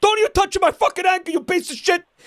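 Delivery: put-on shrill scream, very high. Retelling how his father screamed at his uncle, imitating someone screaming. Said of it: "My father's screaming at him".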